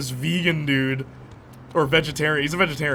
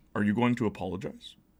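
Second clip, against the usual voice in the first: low, quiet, expressionless deadpan; 6 semitones lower, 5 dB quieter than usual. Retelling what a man asked while holding her brother out the window, deadpan. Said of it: "Like like deadpan, dead face, just went".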